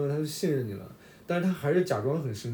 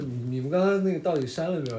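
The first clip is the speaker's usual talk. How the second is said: plain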